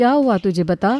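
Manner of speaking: plain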